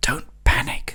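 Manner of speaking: soft, hushed, whispered words. Guiding listeners, the speaker voices what the nerve says: whispered. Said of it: "whispers the nerve".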